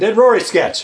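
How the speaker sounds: normal talking voice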